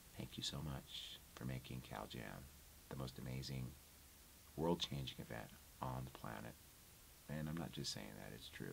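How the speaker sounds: very quiet, breathy, hushed near-whisper. Thanking the audience again after saying so: quiet voice. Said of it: "I'm going back to my quiet voice".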